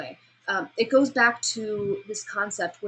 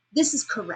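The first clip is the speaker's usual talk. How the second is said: confident falling pitch on "correct"; 2 semitones higher than usual. Teaching how a confident statement sounds: falling inflection on correct. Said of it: "And my inflection went down".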